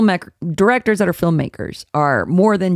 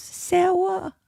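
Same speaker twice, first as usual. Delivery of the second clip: put-on very high baby talk with r turned to w; 12 semitones higher, 7 dB quieter than usual. Retelling how a girl on a trip said a name: imitating a baby voice. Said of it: "Fucking baby voice".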